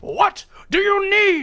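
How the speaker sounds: very high-pitched screaming tone. Voicing an Imperial officer answering an interruption: screaming tone. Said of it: "takes the screaming tone".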